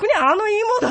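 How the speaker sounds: high-pitched, dismissive tone.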